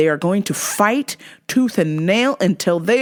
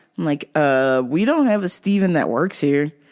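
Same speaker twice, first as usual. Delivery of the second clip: normal talking voice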